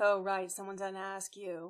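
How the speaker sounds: muttering under breath. While others listen to an announcement, a character mutters a remark under breath. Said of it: "mutters under their breath".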